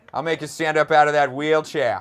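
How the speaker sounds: very loud put-on Boston accent. Joining a friend's bit about people with that Boston accent, put-on Boston accent. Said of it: "when they have that Boston accent".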